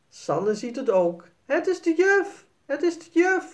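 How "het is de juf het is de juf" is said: very high-pitched, shrill, excited cry. As the ghost's sheet slides off, a child sees it too, calling out. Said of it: "Roept Sanne".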